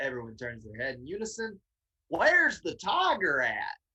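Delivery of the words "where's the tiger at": put-on heavy, loud, slow, swooping southern accent. Retelling greeting a circle of people at a gas station, in a strong southern accent. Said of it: "my my most southern voice kicked on".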